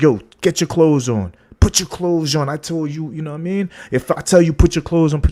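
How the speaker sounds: play-acted, super aggressive, hostile, high-pitched delivery. Storyteller acting out a man's words to a woman, retelling super aggressive talk. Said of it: "he's talking to her like super aggressive".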